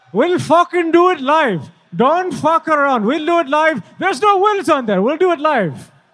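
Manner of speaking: put-on Indian accent. Imagining a TV host as an Indian guy: Bill O'Reilly as an Indian guy. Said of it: "what if, uh, Bill O'Reilly was Indian, like an Indian guy?".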